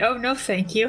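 soft, quiet voice. Reacting in character to a monster that grabs and screams: softly. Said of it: "Me, softly".

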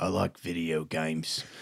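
put-on slow, drawn-out British accent drawl. Imitating someone talking about video games in a put-on British accent. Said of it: "What is that accent?".

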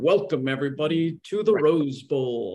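big voice-of-god announcer delivery. Recalling the big broadcasters of his youth, imitating their announcing: Keith Jackson voice-of-God delivery. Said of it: "voice of God".

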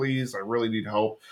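put-on pleading tone. Recapping an episode where a student begs his teacher for help; mock-pleading. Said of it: "really pleads".

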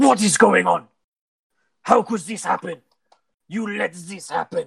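enraged, very high-pitched furious screaming. Narrating a scene, voicing an armored man yelling at two guards, furious screaming. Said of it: "he's screaming at the two guards".

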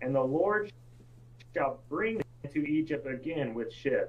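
soft, unhurried reading. Given the floor, the speaker reads a verse aloud, reading a little slower. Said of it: "I'm going to read it a little bit slower".

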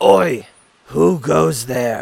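loud, growling voice. The narrator voices someone Silver hears while detecting magic; growlish voice. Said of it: "you hear in a growlish voice".

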